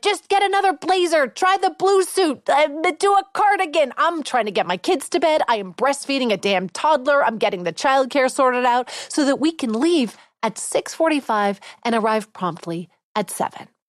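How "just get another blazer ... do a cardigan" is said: mock yelling, high pitched, string of yelled phrases. Retelling getting ready late for a party: retelling a yell at Evan. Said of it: "So now I'm yelling to Evan".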